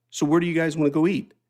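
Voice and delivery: calmest voice, totally unruffled, acted out, easy. Retelling his dad's question after a violent scene: imitating a very calm voice. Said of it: "in the calmest of voice".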